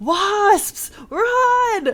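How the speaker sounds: very high yell with the run drawn out. Telling a story about a man cutting a wasp nest, retelling his yell. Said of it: "then he yells".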